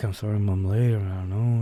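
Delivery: shy mumble, barely getting words out. Retelling apologizing to a teacher for being late: imitating own mumbling. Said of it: "mumbling like".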